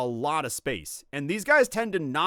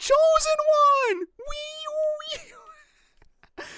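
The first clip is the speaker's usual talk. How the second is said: put-on princess voice, higher and louder; 5 dB louder than usual. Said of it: "Zelda going".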